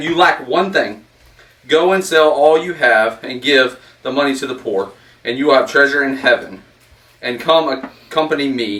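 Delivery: normal talking voice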